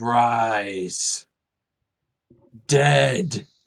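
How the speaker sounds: rumbling undead lord voice, Rise drawn out. The game master voices the demonic lord of undeath rising from the tree: rumbling demon lord voice. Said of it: "there's kind of a little bit of a rumbling to it".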